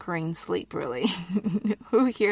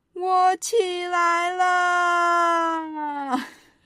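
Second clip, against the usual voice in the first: really loud, very high, very slow, drawn-out shout; 11 semitones higher, 5 dB louder than usual. Showing learners how to say the phrase again: said really loud. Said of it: "Now say it really loud".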